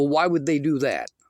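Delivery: mocking, disbelieving, sarcastic and dismissive. Retelling how others answered reports of assault: imitating a sarcastic question. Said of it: "sarcastically ask me".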